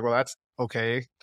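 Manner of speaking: acted wry, ironic, sarcastic tone. Retelling a scene where Joel answers Ellie: imitating Joel sarcastically. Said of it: "sarcastically was like".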